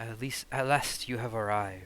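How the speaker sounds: put-on crackly old woman voice. Voicing a crone at a crystal ball who greets the new arrivals: crackling crone voice. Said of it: "her voice crackles like dry weeds".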